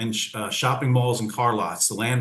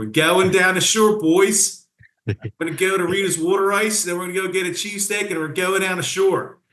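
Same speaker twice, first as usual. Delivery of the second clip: Philadelphia accent, pitched way up and loud; 9 semitones higher, 5 dB louder than usual. Speaker lets their Philly accent come out for the interviewer, in a Philly accent. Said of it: "there's my Philly accent coming out for you".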